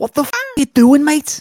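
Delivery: shrill, very high, booming, loud yell. Answering a request to do his rendition of him getting out of the car. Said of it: "your rendition of him getting out of the car".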